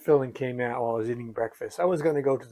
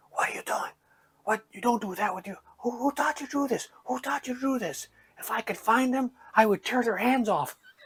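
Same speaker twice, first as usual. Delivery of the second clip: put-on half-whisper in a higher pitch; 11 semitones higher than usual. Retelling the dentist talking to the girl behind the chair: imitating someone half-whispering. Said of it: "now he's whispering like I can't hear".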